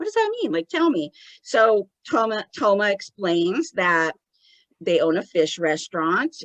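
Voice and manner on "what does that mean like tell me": put-on very high, bewildered, confused small child voice. Retelling a medium's question about a phrase: imitating a confused child's voice. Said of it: "he's almost talking like a little child that doesn't understand".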